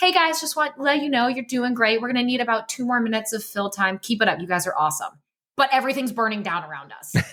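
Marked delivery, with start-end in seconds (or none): 0.0-5.1 put-on super casual, unbothered calm, lifted voice. Recalling stressful moments on the desk when Ethan spoke into their ears; imitating Ethan's very casual voice. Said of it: "with the most casual voice and be like".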